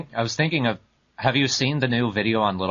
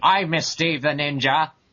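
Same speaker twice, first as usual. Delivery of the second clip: high, pitched-up put-on character voice; 6 semitones higher than usual. Repeating a line after the others: American Skeletor voice. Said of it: "You sound like an American Skeletor".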